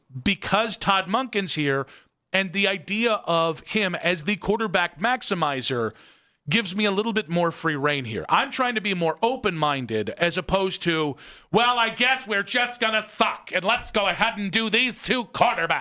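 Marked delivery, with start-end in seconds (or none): 11.6-15.9 Midwestern mom voice. Imitating a cohost's dramatic take on the team's quarterbacks: imitating Ken, Midwest mom voice. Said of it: "was that Ken impression?".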